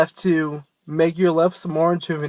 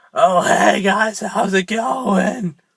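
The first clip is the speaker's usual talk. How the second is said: put-on slow, gravelly-sounding old smoker's voice; 3 semitones higher than usual. Speaker shows how not to sound when screaming, in an old smoker's voice. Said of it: "sound like an old dude who smokes".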